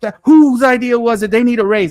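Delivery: high, loud, worked-up, excited screaming rave. Retelling reacting to the first episode's Cyclops landing: imitating own past screaming. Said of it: "I was on here screaming".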